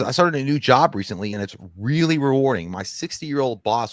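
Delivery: ordinary talk, nothing marked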